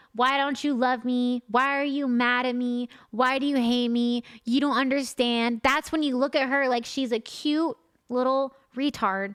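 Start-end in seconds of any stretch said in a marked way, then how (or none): 0.2-5.6 mock pouting, whiny voice. Acting out how a girlfriend talks when upset: imitating a pouty girlfriend. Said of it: "She's pouty. She's like".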